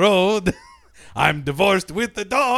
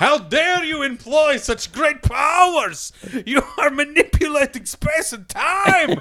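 high, scandalized, huffy, indignant, outraged tone; 7 semitones higher than usual. Acting out angry relatives accusing someone of playing god: imitating angry people. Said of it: "that's why they're angry".

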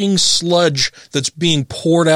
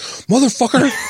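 put-on pissed-off angry voice, pitched higher; 8 semitones higher than usual. Retelling how Tracy reacts when the voice is done at home: imitating pissed-off Tracy. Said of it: "Tracy gets pissed off".

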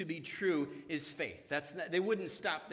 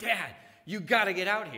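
thrilled, eager shout, loud and swooping; 7 dB louder than usual. Retelling a daughter calling from outside: imitating an excited shout. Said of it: "like this excited shout".

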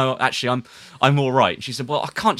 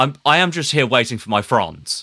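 fake upper-class posh accent. Retelling a woman's words after giving her a cigarette, fake posh accent. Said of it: "putting on a voice to try and match my quite posh accent".

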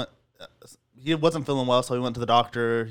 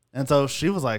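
normal talking voice

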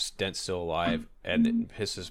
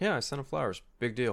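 casual, offhand, nonchalant, pitched-up tone; 6 semitones higher than usual. Reacting to a scene, acting out a man's nonchalant reply. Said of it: "he just says it nonchalantly".

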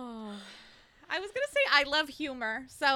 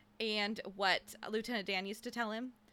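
ordinary talk

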